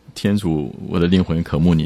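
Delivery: ordinary talk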